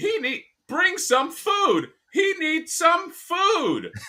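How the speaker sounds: very high, swooping turtle voice, "food" stretched out. Doing a line from the live-action Turtles movie: Leo voice. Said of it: "I could do a Leo".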